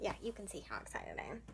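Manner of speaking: dry, breathy, sarcastic whisper. Wrapping up her Smut-a-thon picks list, sarcastic. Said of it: "That sounded sarcastic".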